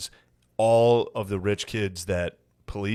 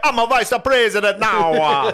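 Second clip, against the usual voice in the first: put-on Jamaican accent, much higher, louder; 13 semitones higher, 8 dB louder than usual. Chatting with a co-host, the speaker mimics the woman they are discussing; Jamaican accent. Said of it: "Are we allowed to do Jamaican accent?".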